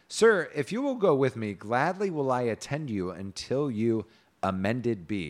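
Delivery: ordinary talk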